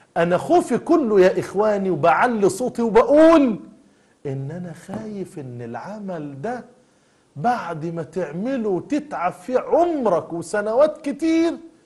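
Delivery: high fearful preaching voice.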